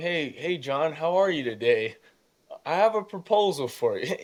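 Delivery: voice cracking and breaking over the words. Reenacting what the speaker once said to a wealthy man, acting out a cracking voice. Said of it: "my voice is cracking".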